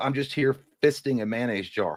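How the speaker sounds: usual speaking voice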